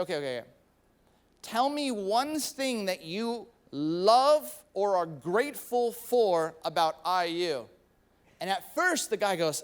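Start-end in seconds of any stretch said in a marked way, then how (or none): none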